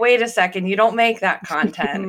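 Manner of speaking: ordinary talk, nothing marked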